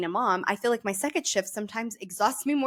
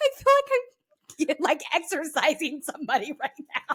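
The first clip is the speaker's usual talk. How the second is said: mock hysterical giggles through the words, pitched up; 6 semitones higher than usual. Retelling a chaotic moment while laughing hysterically. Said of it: "laughing hysterically 'cause I was like".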